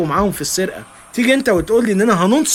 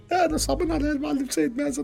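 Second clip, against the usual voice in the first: crying, much higher and quieter; 7 semitones higher, 9 dB quieter than usual. In a drama scene, a character asked why they are crying replies, crying. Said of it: "مالك بتعيط ليه".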